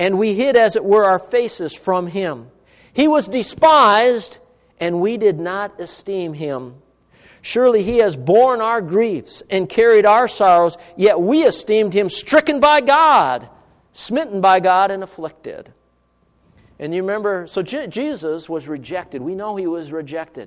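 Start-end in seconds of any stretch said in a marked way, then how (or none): 0.0-15.7 slow, deliberate reading voice. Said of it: "I'm gonna read it slowly".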